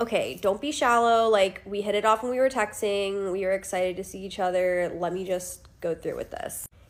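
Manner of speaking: ordinary talk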